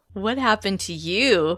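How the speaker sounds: speaking through laughter. Reading a story aloud, a character asks a friend a question: laughing while talking. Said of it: "laughter in my voice".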